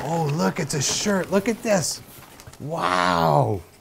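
gasping in surprise. Unwrapping a gift on video, gasping in surprise.

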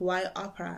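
ordinary talk

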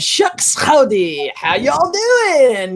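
deliberately bad, slow, swooping, drawn-out Southern drawl. Recalling a made-up character line: Big Shot's deliberately bad Southern accent. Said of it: "it was so bad on purpose".

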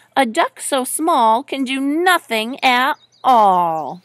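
ordinary delivery

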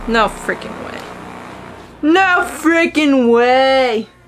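angry. After finding she applied the cream wrong, speaking angry. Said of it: "The amount of angry I am right now".

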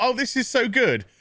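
heavy sarcastic fake enthusiasm. Speaker recalls their reaction to a series' opening minutes, retelling a sarcastic thought. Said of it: "I am being very sarcastic".

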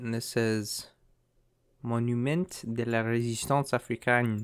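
fake French pronunciation. Guessing the location from street signs, reading one in a put-on French accent. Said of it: "That's my French accent".

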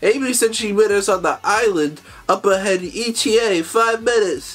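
high cartoon sidekick voice. Recapping a Sonic Frontiers episode, reading a sidekick's line, in a Tails impression. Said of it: "That's my Tails impression".

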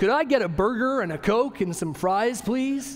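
put-on American accent, best possible effort. Ordering at a drive-through window, in an imitated American accent. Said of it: "I imagined up my best American accent".

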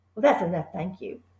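low, soft murmur under the breath. The boy, after finishing a slice, to the Trunchbull offering another: murmuring. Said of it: "the boy murmured".

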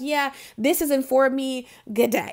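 plain

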